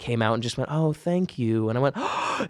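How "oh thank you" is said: very breathy, let out mostly on breath. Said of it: "that very breathy voice that she has".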